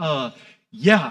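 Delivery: acted-out irritated, impatient tone. Retelling a colleague's reply to a sarcastic remark: imitating an annoyed reply. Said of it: "he was annoyed with me".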